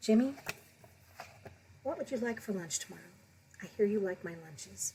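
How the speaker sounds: hushed, soft, very quiet, gentle voice. Telling a story, the speaker quotes a mom speaking to jimmy: real quiet voice. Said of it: "she says in a real quiet voice".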